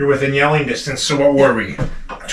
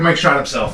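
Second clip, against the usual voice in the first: usual speaking voice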